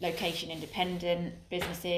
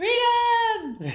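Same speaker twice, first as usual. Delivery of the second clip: very loud, very high rallying battle cry; 12 dB louder than usual. A speaker introduces today's topic with a Braveheart battle cry. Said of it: "is that your best Braveheart impression?".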